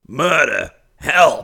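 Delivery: shrill, loud, screeching scream. The narrator reads the big bird's cry after the club hits it, screaming. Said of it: "screamed the big bird".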